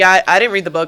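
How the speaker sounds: casual, offhand, dismissive throwaway tone. Retelling how he said he didn't read the book: imitating a dismissive tone. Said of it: "he said it, like, dismissively".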